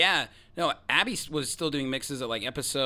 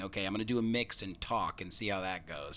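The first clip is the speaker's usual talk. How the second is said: normal talking voice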